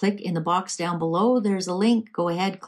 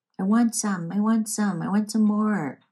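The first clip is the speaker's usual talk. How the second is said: put-on childish little-kid voice, like a five-year-old; 3 semitones higher than usual. Mocking how drugs make someone act like a five-year-old: put-on five-year-old voice. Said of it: "I don't know why I made that voice".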